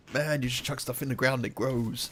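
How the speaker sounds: put-on terrible stoner voice. Talking about gardening, mocking a stoner's view of it in a terrible stoner impression. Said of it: "my terrible stoner impression".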